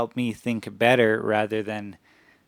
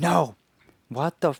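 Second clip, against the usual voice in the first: mock angry yelling, higher; 6 semitones higher than usual. Retelling yelling at the AI early in the morning: imitating angry yelling. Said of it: "being so angry and just yelling at it".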